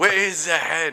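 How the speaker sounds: bad fake French accent. Voicing the handless French soldier from the story, in a bad French accent.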